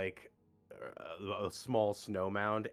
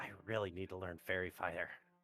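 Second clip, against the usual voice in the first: quiet mutter under the breath, aside; 6 dB quieter than usual. Muttering in character while unable to see the creature: muttering under breath. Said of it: "I mutter under my breath".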